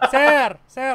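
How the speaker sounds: Pinoy-accented voice. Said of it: "you gotta go with your Pinoy accent".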